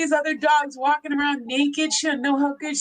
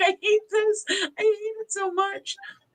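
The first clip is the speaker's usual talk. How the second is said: sad, weepy, whiny, crying pet voice, high; 6 semitones higher than usual. The speaker voices what her upset pet is thinking; voicing a crying pet. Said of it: "she crying?".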